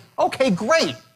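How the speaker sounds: bright upbeat delight. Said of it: "I say, ... Where am I? Enthusiastic, right?".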